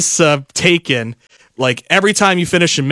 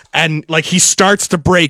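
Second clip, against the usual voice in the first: ordinary delivery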